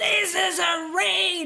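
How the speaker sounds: high-pitched, loud screaming shout.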